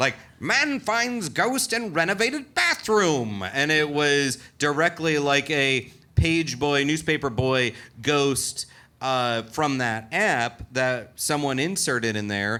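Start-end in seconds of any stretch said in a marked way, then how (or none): 0.4-3.4 very high, old-fashioned, old-timey put-on voice. Reading out a newspaper headline, old-timey voice. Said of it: "I'm going to stick with it".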